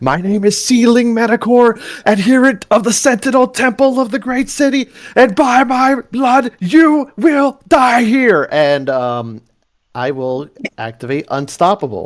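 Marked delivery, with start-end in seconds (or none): 0.0-8.5 shrill screaming at the top of the lungs. A player's character draws a long sword from his back, screaming at top of lungs. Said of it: "he is screaming at the top of his lungs".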